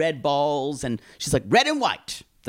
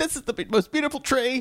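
very high, breaking, half-crying voice; 10 semitones higher than usual. Retelling Mom's reaction to the finished tree, imitating Mom half-crying. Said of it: "kind of like tries to half cry".

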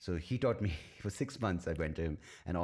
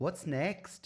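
put-on Welsh accent, attempted, pitched very high; 11 semitones higher than usual. Quoting a Welsh woman's question, imitating a Welsh accent. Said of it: "She was Welsh. ... That is the attempted Welsh accent".

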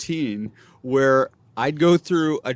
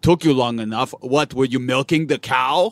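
heavy, thick put-on Dutch accent; 2 semitones lower than usual. Acting out the listener's imagined retort, in a thick Dutch accent. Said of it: "with your thick Dutch accent".

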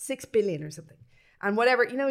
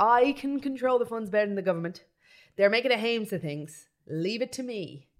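plain

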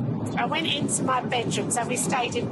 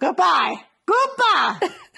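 put-on Scottish accent, much higher; 5 semitones higher, 7 dB louder than usual. Asked to say bye in a Scottish accent, a speaker tries it in a Scottish accent. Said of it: "say bye in a Scottish accent".

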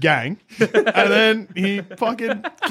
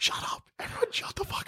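angry, furious whisper, much quieter. Players whispering beside a door, one hushes everyone, in an angry whispered shut up. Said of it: "what are we whispering like".

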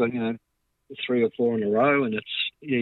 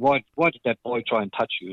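put-on German accent. Retelling what Mum said while watching football on TV: imitating Mum's German accent. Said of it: "in her German accent".

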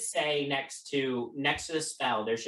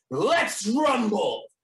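big, booming, loud, high call; 9 semitones higher, 7 dB louder than usual. Voicing a fighter challenging a player before attacking: booming loud voice. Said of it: "his voice booms loudly, filling the entire chamber".

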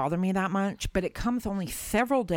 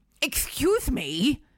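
mock, very officious tone; 7 semitones higher than usual. Retelling what a customer said to her; imitating an officious tone. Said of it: "like in this really officious tone".

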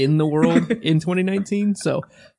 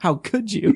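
angry, wounded, indignant outrage; 3 semitones higher than usual. Acting out an angry tweet to an author: mock angry tweet. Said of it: "I'm gonna send her an angry tweet".

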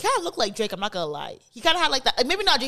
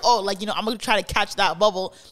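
ordinary talk

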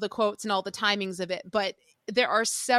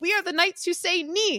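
high, pitched-up announcer voice; 9 semitones higher than usual. Retelling a movie scene, quoting the main knight: imitating the Knight who says Ni. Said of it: "He's like".

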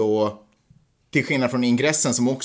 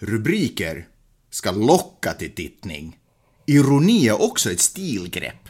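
put-on sing-song, old-uncle Finland-Swedish accent. Reading out Marcus Ekholm's reply about headlines, in an attempted Finland-Swedish accent. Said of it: "har försökt prata finlandssvenska".

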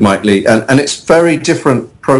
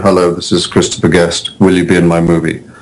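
very low, flat, dead level deadpan; 7 semitones lower than usual. Retelling a phone call inviting him into a movie, Christopher Guest deadpan impression. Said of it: "in his inimitable deadpan way".

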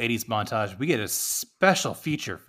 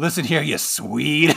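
put-on thick Scottish accent, louder; 3 semitones higher, 6 dB louder than usual. Describing a scottish character pointing out what's wrong with a boat, imitating a thick scottish accent. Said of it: "got this thick Scottish accent".

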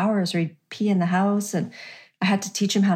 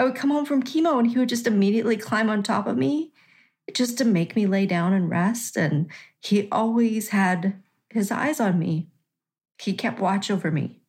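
voice choking up, catching on the edge of tears. Speaker recalls the dog that cared for them after chemo, choking up. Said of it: "I'm going to cry".

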